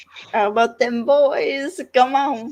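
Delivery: put-on high, excited yelling like a little boy. Retelling a TV scene, imitating a character yelling like a little boy. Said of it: "yelling like a little boy".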